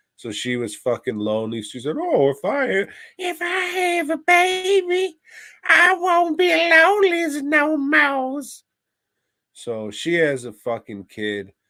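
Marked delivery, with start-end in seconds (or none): 2.0-8.4 put-on very high, slow, loud, with "baby" drawn out. Retelling her wish for a baby: Anna Nicole impression. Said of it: "great, uh, impression of Anna Nicole".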